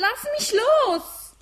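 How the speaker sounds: very high, very loud, shrill struggling cry. In a drama, a seized character protests to the captor, loud protest. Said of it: "Sch, sei still, verdammt!".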